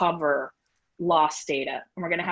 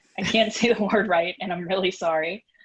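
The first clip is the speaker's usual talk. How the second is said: ordinary talk, nothing marked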